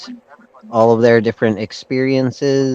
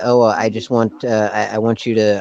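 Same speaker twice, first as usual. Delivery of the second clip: mock passive-aggressive tone of voice. Retelling a message from someone who went through a phone: imitating a passive-aggressive tone. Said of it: "in a really passive-aggressive way".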